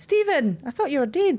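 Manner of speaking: put-on broad Scottish accent, laid on. Retelling a horse TikTok, quoting the farm woman in the biggest Scottish accent. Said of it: "like in the biggest Scottish accent".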